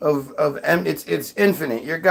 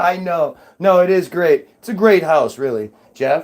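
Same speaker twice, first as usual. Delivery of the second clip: normal talking voice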